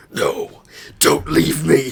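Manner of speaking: gruff, growled superhero voice. Joking with another speaker about a favorite Batman meme; Batman voice. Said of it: "imagine he still has the Batman voice".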